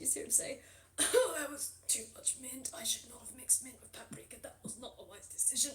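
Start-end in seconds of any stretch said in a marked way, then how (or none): 1.0-5.7 speaking through coughs, slower. Storyteller voicing a beaked character who just sipped a drink, coughing while talking. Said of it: "Just coughing up a storm".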